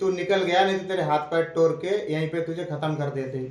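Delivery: plain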